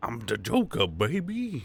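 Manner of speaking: put-on very slow drawl, "baby" stretched out long. Answering a joke about looking like the Joker: Joker impression. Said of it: "It was a good impression".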